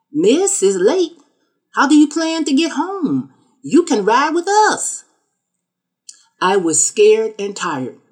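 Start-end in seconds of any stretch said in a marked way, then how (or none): 0.2-5.1 put-on slow, drawn-out Southern accent, pitched high. Retelling what a man who came back to the car said, slow southern drawl. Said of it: "in a slow southern drawl".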